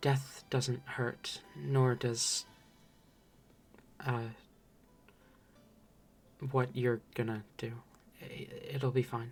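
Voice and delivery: hushed, soft, half-whispered voice. Voicing a character answering a question about pain: half-whispering back. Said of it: "kind of whispers back to you".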